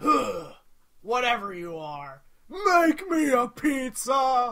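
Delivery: loud, drawn-out, swooping impression. Recalling a favorite game character, in the Zoombinis pizza troll voice. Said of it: "the pizza troll. ... He goes".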